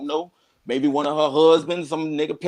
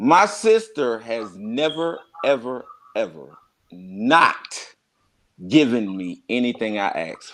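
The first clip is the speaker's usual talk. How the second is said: slow, careful delivery, spelled out word by word; 4 semitones lower than usual. Repeating a claim about his sister so it sinks in: saying it a little slower. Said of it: "let me say that a little slower".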